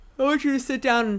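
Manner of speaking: yawning while talking. Speaking directly to listeners, yawning while talking. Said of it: "I'm sorry I'm yawning in your ear".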